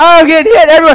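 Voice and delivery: put-on scream of pain. Recounting being pelted with paint, retelling screaming in pain. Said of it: "I'm screaming out in pain".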